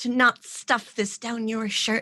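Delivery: whispering as quietly as possible. In character, telling another character something: whispering as quietly as possible. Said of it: "she's gonna whisper as quietly as possible".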